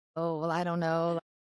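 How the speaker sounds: plain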